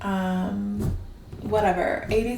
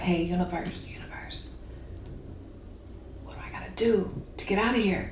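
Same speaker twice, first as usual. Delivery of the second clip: soft, pleading whisper. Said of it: "ask the universe to be like".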